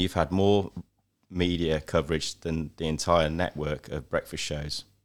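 usual speaking voice

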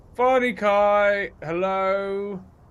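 piercing, very loud, very high call with "Kai" stretched. Told by another player to say it louder, repeating the greeting: louder. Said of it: "Say it louder".

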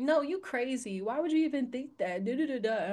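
ordinary delivery

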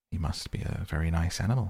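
ordinary delivery, nothing marked

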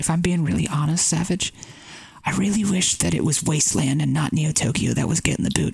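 confiding, hushed stage whisper. Confessing to savage which map should have been removed: whispering. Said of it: "I'm gonna, like, whisper 'cause it's, like, a secret".

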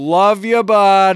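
very loud, high-pitched, full-volume shout. Speaker describing their boatyard crew, retelling a full-volume shout. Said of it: "you'll hear at full volume".

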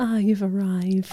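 quiet, breathy whisper. Retelling how David Jason greets his seedlings: imitating David Jason whispering softly. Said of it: "in much softer tones, he'll whisper".

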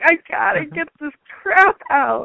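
mock very high, hysterical sobbing crying shout. Speaker retells falling apart after waking up, mom present: retelling hysterical crying. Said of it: "I'm like screaming and crying and having hysterics".

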